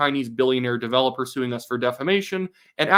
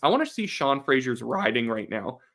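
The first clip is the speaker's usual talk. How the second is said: voice breaking while speaking; 3 dB quieter than usual. Talking about an election race and a candidate's riding, voice cracking. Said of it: "voice voice crack right there".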